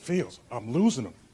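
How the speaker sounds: acted-out whisper. Retelling whispering to a tech guy while talking over Skype: imitating own whisper. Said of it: "So I whispered to my tech guy".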